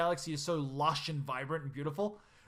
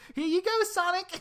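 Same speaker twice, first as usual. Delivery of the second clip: squeaked out, very high-pitched and loud; 6 dB louder than usual. Imagining the Lady of the Lake handing Sonic the sword, squeaky Amy voice. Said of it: "I could just imagine her with a squeaky voice".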